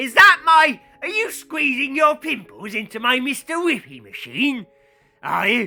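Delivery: furious, high, very loud, accusing angry shout. Acting out an angry ice-cream machine owner in a comic bit, mock-angry Mister Shreks voice. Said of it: "he's angry".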